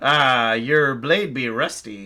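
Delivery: amused, very slow delivery. Voicing a rum thief with a scimitar at his neck: amused and grinning. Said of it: "he kinda grins at you a little bit".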